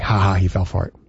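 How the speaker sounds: low, smug, giggling AI voice.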